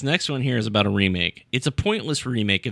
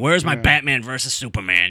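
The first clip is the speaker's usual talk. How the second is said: mock cranky old man voice. Mocking imagined film critics: imitating a cranky old man. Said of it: "who's the cranky old man who's like".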